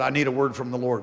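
put-on gruff, direct voice. Retelling a colonel's late-night call asking for a word: imitating a gruff, direct colonel. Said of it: "he was very gruff, very direct".

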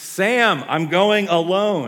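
very loud, very slow, drawn-out yell, pitched high. Retelling a film scene where Frodo yells from a boat: imitating Frodo yelling. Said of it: "He yells".

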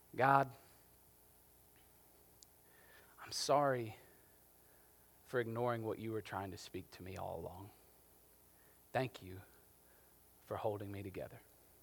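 hushed, whispered under the breath. Retelling a prayer said while walking down the hall: reenacting a whispered prayer. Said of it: "I whisper under my breath".

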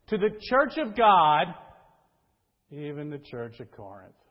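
loud, mocking, sarcastic tint. Studying a clause in the original text, read with that tint: sarcastic. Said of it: "it sounds almost like this ... it has that sarcastic type tint to it".

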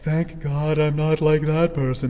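slow self-righteous tone. Showing how self-righteous people sound in the speaker's head, self-righteous voice. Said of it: "That's my self righteous voice".

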